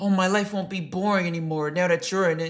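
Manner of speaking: very high, mocking, sappy lovestruck voice. Mocking how another speaker talks about a girl: mocking imitation of a lovestruck guy. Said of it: "The way you talking, it sound like some sucker shit".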